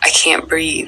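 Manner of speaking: desperate, breathless, whispered pleading.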